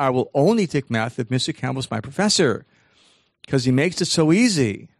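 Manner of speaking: ordinary talk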